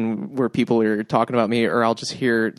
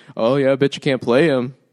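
mocking, sarcastic disbelief; 3 semitones higher, 4 dB louder than usual. Unicyclist carrying bagpipes repeats what people say to him, mock-sarcastic bystander. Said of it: "people will sarcastically be like".

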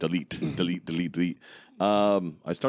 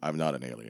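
put-on deadpan, much lower and quieter; 6 semitones lower, 6 dB quieter than usual. Praising an actor who plays a cop, quoting his denial while imitating a deadpan delivery. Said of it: "his deadpan delivery".

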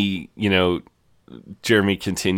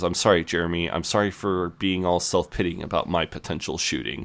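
normal talking voice

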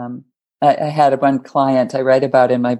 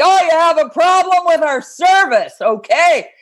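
mock overbearing, loud, booming, intimidating voice, very high. Retelling how a carpenter client spoke to customers: imitating a loud intimidating voice. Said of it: "He just had one voice and it was loud".

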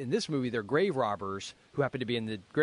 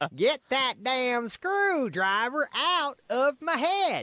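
really bad put-on Texas accent, very high; 12 semitones higher than usual. Retelling a movie scene, the speaker quotes a line in a really bad texas accent. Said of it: "this really bad, like, Texas accent".

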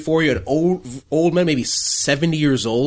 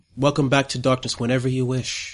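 voice of a dark figure; 3 semitones lower, 3 dB quieter than usual. Voicing a dark figure heard speaking to the travelers: dark person's voice. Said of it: "the dark person go like".

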